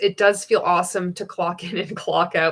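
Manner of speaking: ordinary talk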